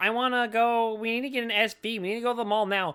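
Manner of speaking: bratty, nagging whine. Retelling a movie girl's demand to go to the mall: imitating a whiny girl. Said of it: "That girl was really fucking whiny".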